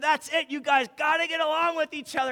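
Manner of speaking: play-acted high, exasperated, frustrated yell. Speaker retells finally yelling at home, retelling a frustrated yell. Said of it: "And I was so frustrated".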